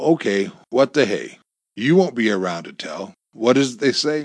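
plain

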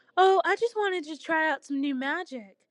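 sugary, high, sweet cooing tone. A narrator reads one character's answer in a story: cooing. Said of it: "Hecate cooed".

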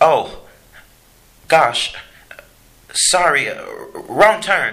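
very slow, high, drawn-out, caught-breath gasp. Charles, as a group turns towards him, gasping. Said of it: "gasped Charles".

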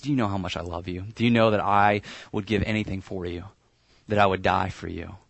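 hushed whisper. Acting out a father holding a child, telling him he loves him: whispering. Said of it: "he whispers to him".

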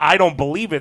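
normal talking voice

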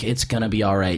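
ordinary talk, nothing marked

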